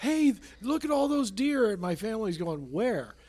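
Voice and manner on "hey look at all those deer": loud, high, shouted yell. Recalling seeing deer while driving in Colorado and calling to family, retelling a yell. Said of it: "and I'm yelling".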